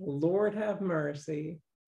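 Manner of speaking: unpolished, half-formed Southern accent. Asked to show a southern accent, a speaker repeats a phrase in a southern accent. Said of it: "I want to hear your Southern accent".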